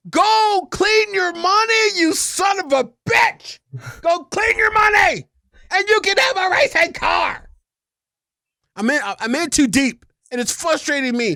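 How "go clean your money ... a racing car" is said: mock exasperated, high, frustrated yelling scream. Retelling screaming at the computer, imitating a scream. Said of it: "I'm screaming at my computer".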